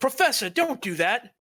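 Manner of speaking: very high-pitched shouting. Voicing a character who yells to distract a spellcaster: Albie yelling. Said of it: "Albie goes".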